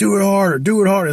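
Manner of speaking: very high-pitched, amped-up, egging-on yell. Describing someone yelling at the guys during the action, retelling a yell. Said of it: "So he's yelling and like amping it".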